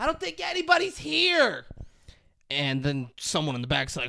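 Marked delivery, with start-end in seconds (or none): 0.0-1.6 very high, shrill, drawn-out yell. Retelling a scene of calling out at a deserted gas station: imitating someone yelling. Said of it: "she just yells".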